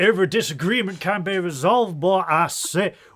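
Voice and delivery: very loud, high-pitched cartoon-rooster bellow. Joking about settling a disagreement: Foghorn Leghorn voice. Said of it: "why do I sound like Foghorn Leghorn?".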